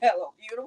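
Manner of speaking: acted weeping through the words, tearful voice. Speaker recalls saying this into the mirror months ago, retelling crying. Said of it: "I'm looking in the mirror and I'm crying".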